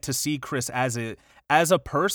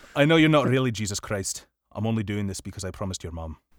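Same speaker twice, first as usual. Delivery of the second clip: low, put-on Irish accent drifting into Scottish; 4 semitones lower than usual. After offering to do the Irish accent, delivering the line: attempted Irish accent. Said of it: "I can do the Irish accent".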